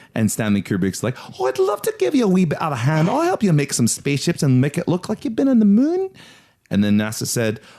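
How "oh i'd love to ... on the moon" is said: put-on Northampton accent, pitched very high. Acting out a quoted line in a story: put-on Northampton accent. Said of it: "this is a bit of a Northampton accent".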